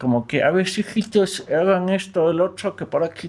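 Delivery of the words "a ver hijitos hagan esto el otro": put-on elderly old man's voice, pitched up. Actor demonstrating the voice of an old-man character from his own play. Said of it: "voz del viejito es una voz de un viejito".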